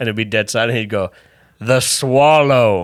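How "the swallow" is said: put-on older man voice, higher and louder. Retelling the club owner's stage bit: imitating Nike's voice. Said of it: "this is his exact voice".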